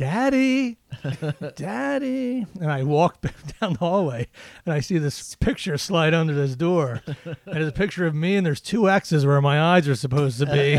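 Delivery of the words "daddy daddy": put-on high, eerie, creepy horror-movie child voice. A father retells hearing his punished son call to him, creepy horror-movie child voice. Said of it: "almost like out of a horror movie, the way his voice was".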